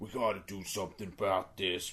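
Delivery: rough, gruff, clumsy put-on Texan accent. Describing a game clip of a character talking, in a bad gruff Texan accent. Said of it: "my Texan accent's pretty bad".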